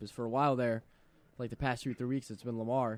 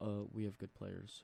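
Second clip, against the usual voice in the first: quiet, slow monotone. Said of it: "He talks so mo-, monotone".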